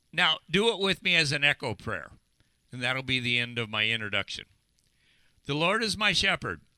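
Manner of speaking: ordinary talk, nothing marked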